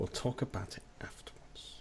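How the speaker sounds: put-on whisper.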